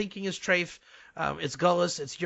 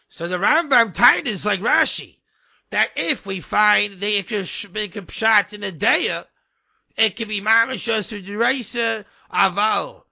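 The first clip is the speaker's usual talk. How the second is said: booming, very loud, slow, sermon-style preaching voice; 4 semitones higher, 8 dB louder than usual. Impression of the Rav at the Shabbos drosha: imitated yeshivish preaching accent. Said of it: "here's a big uh, little impression for you".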